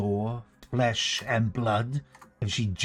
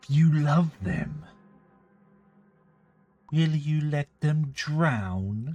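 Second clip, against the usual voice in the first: syrupy sweetness, high voice, drawn-out drawl; 5 semitones higher than usual. The narrator speaks as Vera to the listeners: Vera's very sweet voice. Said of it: "She says in a very sweet voice".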